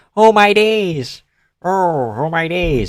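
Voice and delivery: slow, botched, put-on posh British accent. Attempting a posh British accent for a catchphrase: bad posh British accent. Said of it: "in a posh Brit-".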